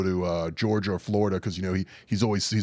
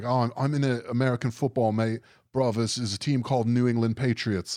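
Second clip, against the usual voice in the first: mock English accent, much higher; 4 semitones higher than usual. Imitating a british guy talking about american football, in an english accent. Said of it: "That's my English accent".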